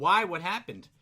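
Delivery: very loud, high, carrying everyday speaking voice. Imitating his wife answering the whisper: imitating wife speaking loudly. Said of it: "in a normal voice, loud enough for everybody to hear".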